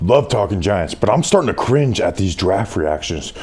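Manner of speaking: irate, annoyed, angry reading voice. Reading aloud somebody's response to a post, in an angry voice. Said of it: "I'm going to read it in an angry voice".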